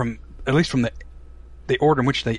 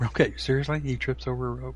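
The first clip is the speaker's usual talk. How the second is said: ordinary talk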